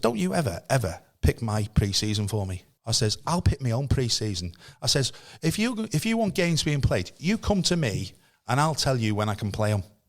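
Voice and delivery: plain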